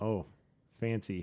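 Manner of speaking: heavily sarcastic tone. Reading out the first dish on the list, the speaker reacts with full sarcasm. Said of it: "With full sarcasm there".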